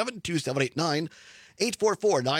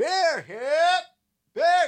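very loud, very high stadium vendor cry; 14 semitones higher, 5 dB louder than usual. Explaining the rhythm vendors need at baseball games, he demonstrates: stadium vendor call. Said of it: "You got to get that rhythm".

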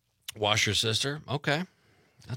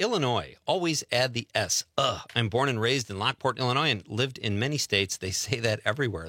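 plain

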